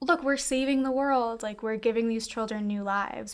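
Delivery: ordinary talk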